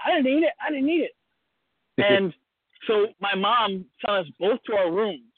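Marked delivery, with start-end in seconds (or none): 0.0-1.2 put-on children's voices speaking. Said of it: "me and my sister were like".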